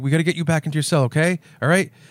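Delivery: mock frightened, scared, nervous coaxing voice. Retelling a movie scene where Danny Trejo approaches the killer: imitating a scared Danny Trejo. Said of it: "and he's, like, scared".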